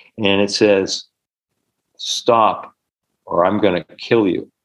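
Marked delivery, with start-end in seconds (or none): 2.0-4.4 low, heavy, slow, masculine possessed voice. Retelling a healing session where a woman's voice changed: imitating a masculine entity voice. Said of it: "her voice changes, becomes very masculine".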